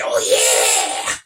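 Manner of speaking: put-on thick, heavy rural accent. Imitating how a wrestler says his catchphrase: redneck Macho Man Randy Savage voice. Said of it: "Macho Man Randy Savage".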